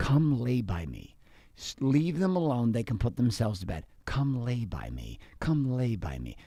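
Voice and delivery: echoey, echoing voice. Describing a voice heard in the mind after last night, echoing voice. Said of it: "I'm hearing in my mind an echoing voice".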